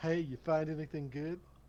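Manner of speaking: whispered line in a character voice. Whispering in character to a woman searching deposit boxes: whispering in character. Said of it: "I kinda wanna whisper to her".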